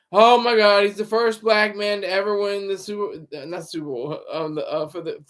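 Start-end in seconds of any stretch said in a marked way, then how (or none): none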